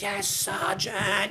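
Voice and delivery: mock shrill scream, very high. Retelling answering a platoon sergeant in basic training: imitating own past scream. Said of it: "I remember screaming".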